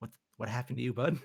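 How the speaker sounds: whispered softly. Sneaking up behind an elderly character in a game: whispering in his ear. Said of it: "whisper in his, in, in his ear".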